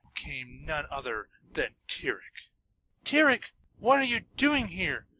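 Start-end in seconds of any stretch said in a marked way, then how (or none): 3.0-5.0 utterly bewildered, very high cry. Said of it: "Twilight asked in complete bewilderment".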